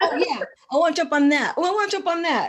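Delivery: loud, fast, laughing, eager blurt. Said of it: "I was like".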